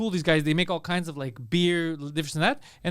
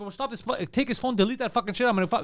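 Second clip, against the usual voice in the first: mock angry, out-of-control, furious tirade; 4 semitones higher than usual. Retelling confronting a man filming him, reenacting his own furious outburst. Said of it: "So I'm going crazy".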